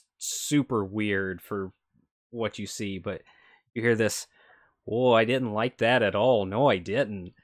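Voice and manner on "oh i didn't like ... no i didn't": put-on homey, everyday, very human Midwestern accent. Describing a creature with mandibles that speaks, human Midwestern accent. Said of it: "you hear this very human Midwestern accent come out".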